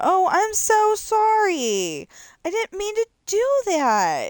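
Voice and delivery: mock sarcastic sing-song, very high, very slow, drawn out. Retelling what is said in a game after running someone over: retelling own sarcastic apology. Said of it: "being totally sarcastic the whole time".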